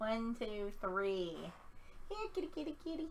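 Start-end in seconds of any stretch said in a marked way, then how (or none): 2.1-3.1 very quiet, odd, weird-sounding calling voice. Calling a character in a game like a cat: weird cat-calling voice. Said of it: "that's a little weird, guys. I apologize".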